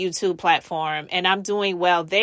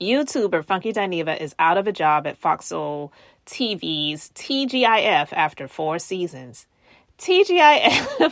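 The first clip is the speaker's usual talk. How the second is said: laughing throughout while reading aloud. Reading a written piece aloud to viewers: laughing while reading. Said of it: "I'm laughing".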